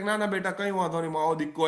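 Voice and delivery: plain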